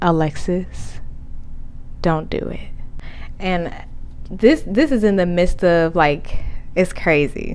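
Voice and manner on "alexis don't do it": very calm, hushed, breathy whisper. Recalling the voice that called the speaker's name, retelling a very calm voice. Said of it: "in the most calm voice".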